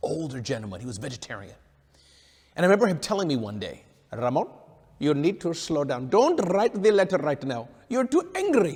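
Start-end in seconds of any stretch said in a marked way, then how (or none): 4.1-8.8 put-on slight Indian accent. Retelling advice from an older friend from India, imitating Mister Chidambaranathan's Indian accent. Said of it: "I'm gonna mimic his accent a bit".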